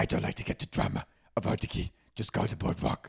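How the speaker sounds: put-on Staten Island accent voice. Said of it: "I miss invoking her".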